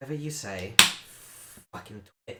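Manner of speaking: eye-rolling brush-off tone. Voicing a guard who rolls her eyes at an order: eye-rolling dismissive retort. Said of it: "Ivala just rolls her eyes and she's like".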